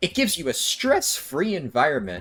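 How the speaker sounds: breaking, groggy voice cracking mid-line. Speaker who just woke up, talking about a game, with a voice crack. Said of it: "Voice crack there".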